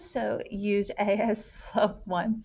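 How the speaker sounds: voice cracks, words very slow and drawn out. Speaker working through a graph aloud, voice cracking. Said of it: "my voice kind of cracked there".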